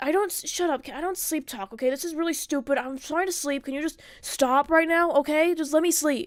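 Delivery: very aggressive, hostile, acted-out tone. Retelling a half-asleep partner's reply after being woken: imitating an aggressive partner. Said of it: "you were very aggressive when I, when I was talking to you".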